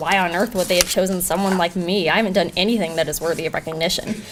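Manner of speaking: plain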